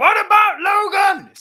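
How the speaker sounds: high, loud screaming fanboy voice.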